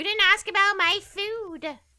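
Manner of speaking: very high, shrill, loud teasing put-on voice. Teasing the other speaker by imitating their complaint: imitating the other speaker. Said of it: "I didn't mean to give you that voice".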